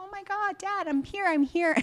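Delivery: mock overjoyed, excited gushing, very high-pitched. Retelling the scene where the returned dog greets his owner: retelling an excited greeting. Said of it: "And he's so excited".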